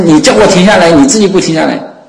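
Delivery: high, loud, exasperated frustrated yell.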